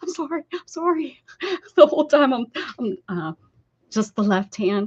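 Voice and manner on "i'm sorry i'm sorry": high, pained cry. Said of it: "as I'm screaming and yelling".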